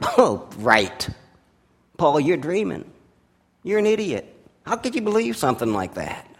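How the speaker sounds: mocking, scornful, derisive sneering jeer. Retelling how some listeners reacted to paul, imitating a sneer. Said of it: "some of them sneered".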